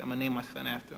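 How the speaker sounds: ordinary delivery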